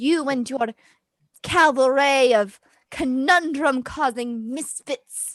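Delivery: yelling. Confronting the group in a drama scene, yelling. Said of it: "I don't get why you're yelling at me".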